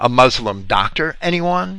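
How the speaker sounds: normal talking voice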